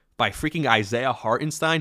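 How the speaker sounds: ordinary talk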